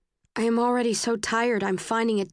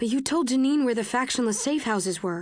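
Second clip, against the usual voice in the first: plain reading voice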